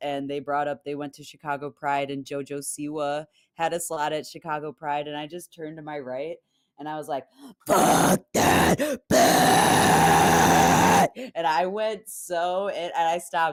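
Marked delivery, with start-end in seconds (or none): 7.7-11.3 very loud, full screamo scream. Retelling a moment at a bar with locals: imitating own screamo yell. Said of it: "did I just become a screamo artist?".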